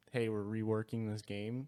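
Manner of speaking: ordinary talk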